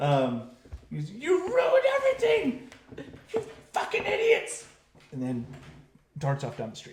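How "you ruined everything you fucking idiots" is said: put-on very high, shrill, swooping teen boy scream. Game master voices a teenage boy screaming at the hiding players from the alleys: teenage boy screaming. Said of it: "young teenage boy's voice screams at you".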